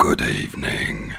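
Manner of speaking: deep sexy voice. Greeting the host at the start of the episode: deep and sexy voice. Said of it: "that's a deep and sexy voice".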